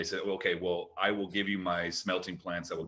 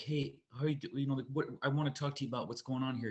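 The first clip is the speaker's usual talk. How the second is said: subtle, higher-pitched voice with jaw clenched; 7 semitones higher than usual. Showing a high school John Travolta impression from Pulp Fiction: John Travolta impression. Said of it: "I did, like, John Travolta".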